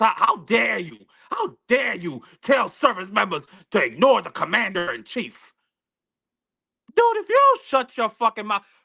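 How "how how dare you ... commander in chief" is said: mocking put-on voice imitating another speaker's manner. Mocking a man's remarks so viewers can see, Stephen A. Smith impression. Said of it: "How in that friggin' voice?".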